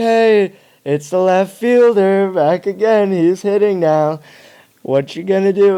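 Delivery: high, loud, jeering, heckling taunt. Retelling fans taunting a player at bat: imitating mocking taunts. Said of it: "roasting me while I'm hitting".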